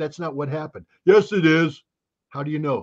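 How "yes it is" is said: worst fake, slow, dumb American drawl. Playing one side of a mock argument, in a worst dumb American accent. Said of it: "I put in my worst dumb American accent".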